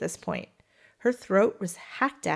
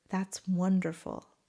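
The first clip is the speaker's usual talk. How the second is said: imitated whisper; 4 dB quieter than usual. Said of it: "she whispered".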